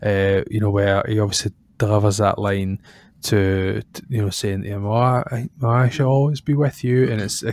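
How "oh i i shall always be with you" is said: eerie, unsettling, weird and creepy voice. Quoting a film line while discussing the film: imitating a weird creepy voice. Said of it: "that weird, creepy voice".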